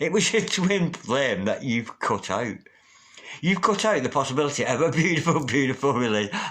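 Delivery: giggling, laughing through the words. Reading a tarot spread for viewers, laughing while talking. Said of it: "I don't know why I'm laughing".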